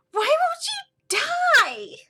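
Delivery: very high, very loud, annoyed screech. Game master voices a monster during a tabletop battle, annoyed screeching. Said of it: "screeching like".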